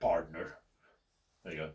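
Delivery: cowboyish mock voice. Talking through a card game move, cowboyish impression. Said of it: "That's my best cowboyish impression".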